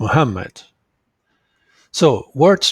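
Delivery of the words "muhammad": Muhammad with stress on second syllable ham. Explaining that muhammad has three syllables: stress on ham in muhammad. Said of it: "this word has three syllables and the second syllable is stressed".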